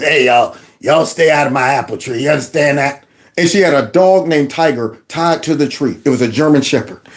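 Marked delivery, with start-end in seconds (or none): 0.0-3.0 put-on raspy, smoky, cigarette-rough old lady voice. Recalling a childhood neighborhood tree, the speaker quotes its owner, imitating Miss Dimes. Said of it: "she talked like this".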